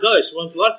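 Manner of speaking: ordinary talk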